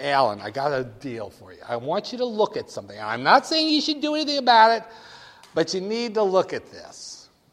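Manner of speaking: put-on loud, animated New York accent with pushy salesman delivery. Speaker retelling a phone call from Paul, a New York guy, Paul's New York accent. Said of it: "New York accent".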